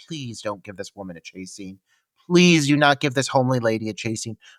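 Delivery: acted under-breath mumble. Retelling own reaction while watching a movie: imitating muttering under breath. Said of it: "under my breath".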